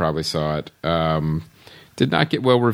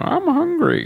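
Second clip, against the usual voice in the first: very high, squeaky cartoon bear voice. Imitating a documentary narrator voicing a bear at a stream: John C. Reilly cartoon bear voice. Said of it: "you just kinda hear his voice".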